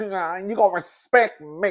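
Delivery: put-on nasal voice. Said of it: "she was not as nasal".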